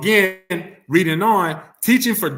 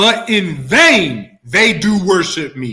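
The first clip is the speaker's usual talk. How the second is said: loud, slow, deliberate reading, "vain" drawn out; 5 dB louder than usual. Reading a bible verse one more time for everyone, loud and slow. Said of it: "I'm gonna read it loud and slow".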